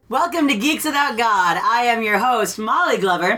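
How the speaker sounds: bright, upbeat, chipper tone. Host opening the show and introducing herself, in a really chipper tone. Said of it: "I have a really chipper tone".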